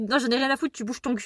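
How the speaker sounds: mock-heated, arguing squabble tone. Retelling people arguing in a car, retelling a heated argument. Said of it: "en train de s'embrouiller".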